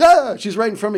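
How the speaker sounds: high, loud exclaimed delivery.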